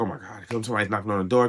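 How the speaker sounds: put-on irritated, exasperated, put-out outburst. Retelling own reaction to a knock at the door: imitating own annoyance. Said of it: "I was immediately annoyed".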